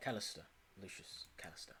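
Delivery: hushed, breathy, breathed-out voice. Introducing himself in character to another adventurer, like James Bond. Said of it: "he's just introducing himself like James Bond".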